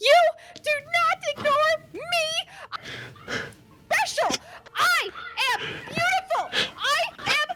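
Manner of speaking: screaming while crying, tearful. Voicing a crying character screaming at another player: screaming while crying. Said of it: "screaming at you about how".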